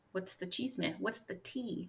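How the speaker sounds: put-on very quiet granny voice. Podcast host prompting co-host Igby for gossip, like a grandma saying slang. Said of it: "You sound like someone's tea. Grandma".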